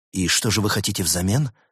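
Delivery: plain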